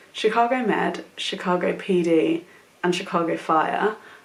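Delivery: slow, careful delivery.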